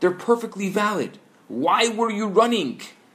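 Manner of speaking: high, shouted voice. After a chase, the officer checks Muttel's papers and confronts him, shouting. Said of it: "he shouts".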